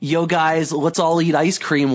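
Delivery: ordinary delivery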